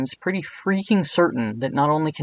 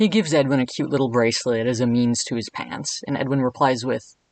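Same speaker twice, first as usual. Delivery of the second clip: usual speaking voice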